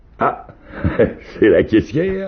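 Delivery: very high, slow, laughing through the words. Narrator reading Nikita after the girl passes the money to Aniuta: laughing. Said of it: "avec un nouveau rire".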